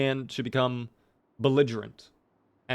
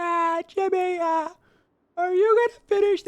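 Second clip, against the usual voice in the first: very high cartoon sidekick voice rising into a squeak; 4 dB louder than usual. Joking about eating too many donuts, doing a Carl Wheezer voice. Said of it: "my Carl Wheezer voice".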